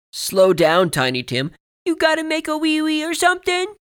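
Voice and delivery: put-on very high, very loud, taunting sing-song child voice. A seventh-grade bully slaps books from a boy's hands, mocking child's voice. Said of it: "in a mocking child's voice".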